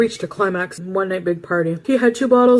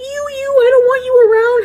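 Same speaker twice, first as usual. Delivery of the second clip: very high-pitched, loud, piping, squeaky voice; 5 dB louder than usual. Retelling what Little Timmy would say: imitating Little Timmy's high-pitched voice. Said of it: "He had, like, a really high-pitched voice".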